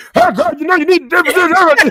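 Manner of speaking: mock man's voice turning bossy. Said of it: "as soon as they say something out of wire".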